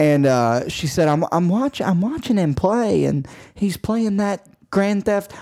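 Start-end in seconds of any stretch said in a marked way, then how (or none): 1.1-5.3 put-on woman's voice with a Southern accent, pitched up. Retelling what Carrie said about a patient playing a game: imitating Carrie, sounding Southern. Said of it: "when I do Carrie, she sounds Southern".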